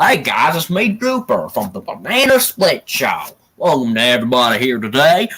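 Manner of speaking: southern drawl with swooping pitch. Describing the voice made for the character, then doing it: Drooper's southern drawl. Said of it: "he had a southern drawl voice".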